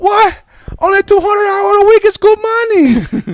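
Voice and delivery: put-on Chinese accent. Acting out a dad praising factory pay: put-on chinese accent. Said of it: "the Chinese accent's the one".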